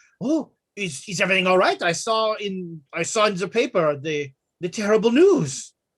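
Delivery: put-on French accent. Voicing the Baroness asking from the stairway about the news: French accent. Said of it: "if she had a French accent before".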